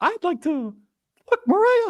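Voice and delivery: very high, squeaky cartoon mouse voice. Answering a request to swear in a voice: Mickey Mouse voice. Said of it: "drop an F in the Mickey Mouse voice".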